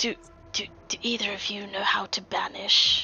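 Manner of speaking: hushed whisper. A character leans toward two companions to ask a question, whispering. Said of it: "just kind of whisper to them".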